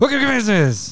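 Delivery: very high, rapid, rattled-off garbled mumble. Trying to say the show's greeting faster, as asked: very fast mumbled delivery. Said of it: "get it faster and faster each week".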